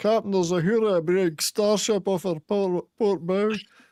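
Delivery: high-pitched put-on Scottish accent. Quoting a Scottish Star Trek clip to the others: put-on Scottish accent. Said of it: "the Scottish Star Trek one where she goes".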